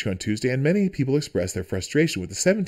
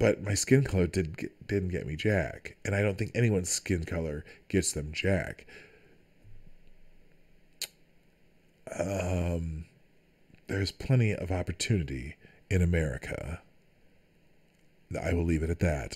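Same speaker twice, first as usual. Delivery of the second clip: mock seductive voice, lower and quieter; 6 semitones lower, 7 dB quieter than usual. Giving a personal opinion on privilege in a put-on sexy voice. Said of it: "I went back to my sexy voice".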